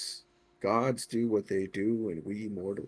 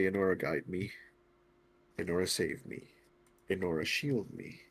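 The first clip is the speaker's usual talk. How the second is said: hushed, slow, prayer-like whisper; 4 dB quieter than usual. With the wind blowing, the speaker prays to Enora in a whispered prayer. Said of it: "So I'm whispering out loud".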